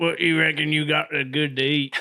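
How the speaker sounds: put-on Arkansas accent, character voice. Retelling how the character orders food: Sling Blade voice. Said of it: "he just walks up and goes".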